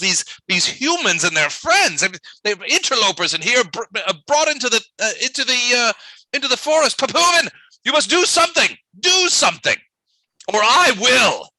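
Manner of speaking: yelling character voice. Voicing a character who walks quickly toward the players: Vool yelling. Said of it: "and he's yelling".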